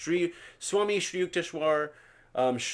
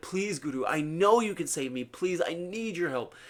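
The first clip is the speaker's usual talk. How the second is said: acted, crying, tearful, desperate pleading. Retelling a man crying at his guru's feet, imitating tearful pleading. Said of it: "He's crying at his feet".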